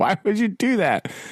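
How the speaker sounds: high-pitched, incredulous tone of disbelief. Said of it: "You're like".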